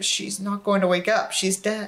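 mumbling, muttering under breath. Watching a man try to wake his girlfriend in a truck, muttering. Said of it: "I muttered".

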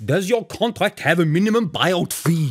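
loud, shouted yelling. Mid-conversation, one character suddenly shouts a question at another; shouting. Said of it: "why are you shouting?".

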